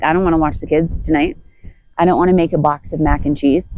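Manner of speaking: ordinary talk, nothing marked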